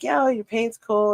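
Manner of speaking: normal talking voice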